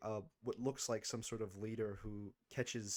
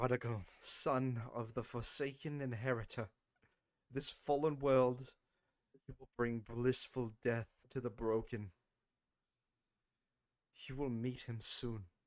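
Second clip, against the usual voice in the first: deranged, crazed madman's delivery; 2 semitones higher, 4 dB louder than usual. Narrating a game, the speaker voices a man drinking blood in a mad voice. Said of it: "he says in this like mad voice".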